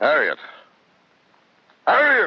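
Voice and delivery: sing-song call, pitch swooping up and down. The meeting is closed; call for Harriet, who has not answered you, yelling. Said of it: "Stop yelling".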